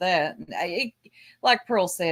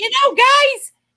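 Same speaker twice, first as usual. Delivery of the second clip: put-on squall, much higher, louder; 11 dB louder than usual. Mocking a woman's rant, the speaker imitates her squalling voice. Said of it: "in that lovely voice squalling".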